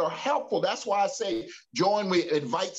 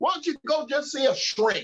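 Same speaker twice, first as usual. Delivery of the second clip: put-on, pitched-up, facetious sarcastic tone; 6 semitones higher than usual. Voicing what somebody might say about therapy: put-on sarcastic tone. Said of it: "I'm being facetious, sarcastic".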